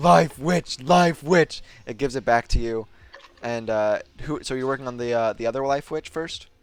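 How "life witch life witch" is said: screaming, much higher, louder, slower. Voicing a creature that carves a tonfa and punches the air, screaming. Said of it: "just screaming".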